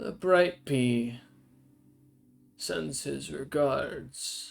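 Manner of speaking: slow, deliberate, drawn-out giant voice. Voicing a giant who looks down in the dark: voicing a giant. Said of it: "and goes".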